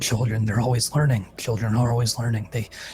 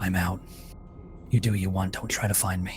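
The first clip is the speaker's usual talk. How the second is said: low, hushed whisper; 4 semitones lower, 7 dB quieter than usual. Narrator voicing a woman on the phone before she hangs up, whispering. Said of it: "And then another whisper".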